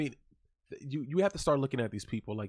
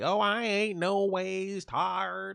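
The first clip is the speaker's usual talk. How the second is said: fake Southern drawl, very high and very slow; 9 semitones higher than usual. Mocking a politician putting on an accent down south: imitating Hillary Clinton's fake Southern accent. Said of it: "she's putting on a bullshit accu-, accent".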